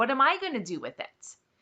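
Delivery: normal talking voice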